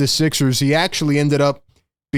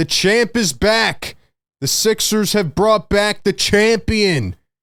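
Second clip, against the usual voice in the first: sarcastic, pitched-up, celebratory triumphant tone; 6 semitones higher than usual. A channel host opening a video on the sixers, sarcastic. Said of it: "Obviously, I'm being sarcastic".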